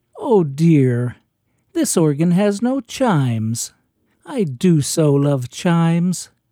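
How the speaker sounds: sweet, delicate, dainty and charming small voice. Quoting a woman who turned to Beth after surveying the organ, charming little voice. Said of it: "said in the most charming little voice".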